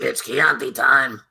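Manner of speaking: tiny, small, high-pitched little voice. Quoting a guy's line, in what the listener hears as a Lollipop Guild voice. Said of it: "Did he become one of the members of the Lollipop Guild?".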